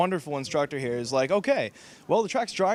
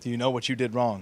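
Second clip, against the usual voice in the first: put-on very serious tone, pitched lower; 4 semitones lower than usual. Retelling being questioned by the track day coordinator: imitating John Muller's very serious tone. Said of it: "in his very most serious tone".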